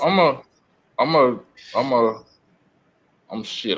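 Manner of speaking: very slow, stumbling, repeated stutter. Talking about their dad, stuttering. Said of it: "I'm stuttering right now".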